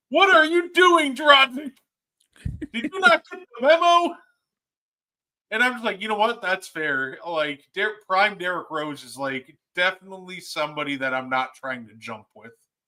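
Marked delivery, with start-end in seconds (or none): 0.1-4.1 very high, shrill, full-throat screaming announcer call. Recounting a Bulls announcer's call of a play on Dragic; imitating Stacey King screaming. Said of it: "he tears is screaming".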